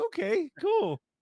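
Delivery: very high mock reaction, tossed off.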